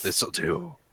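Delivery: sighing mutter under the breath. Taking a shirt offered as a towel: sighed under the breath. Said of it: "Just like a sigh under my breath".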